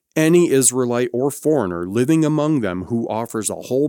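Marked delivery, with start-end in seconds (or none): none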